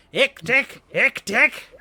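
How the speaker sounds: goblin shouting. Narrating a scene where a goblin points at a light, goblin yelling. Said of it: "One of them points and yells out".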